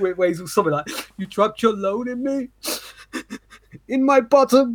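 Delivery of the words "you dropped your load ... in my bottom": mock blubbering in a high, tearful crying voice. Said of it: "all crying and shit".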